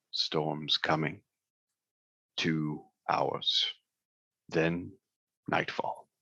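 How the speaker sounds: very deep, guttural rumble from the throat. Describing voices that are overheard, the speaker does the third in a very deep, guttural voice. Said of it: "this is a very deep, guttural".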